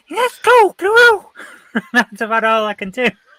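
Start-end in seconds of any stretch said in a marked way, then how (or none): 0.2-1.3 squeaky, high, loud voice. Speaker admitting they can't do the voice, then trying a Mickey Mouse voice. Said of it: "I can't do Mickey Mouse's voice".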